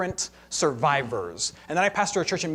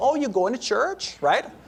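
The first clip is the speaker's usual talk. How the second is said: put-on Wisconsin mom accent, pitched up; 7 semitones higher than usual. Describing church members, the speaker voices a mom calling from Wisconsin: Wisconsin mom accent impression. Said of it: "That's my impression of people from it".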